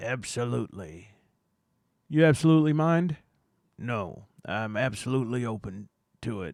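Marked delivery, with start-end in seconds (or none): 3.8-6.5 slow Southern American drawl. Answering a local investigation enthusiast's questions in a bit, in a Southern accent. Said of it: "apparently I'm still Southern".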